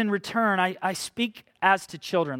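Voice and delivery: ordinary talk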